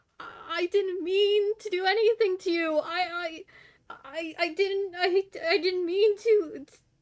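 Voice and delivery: tearful stammering character voice. A game master voices Beppo backing away from the player's character: tearful and stammering. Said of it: "he is literally in tears".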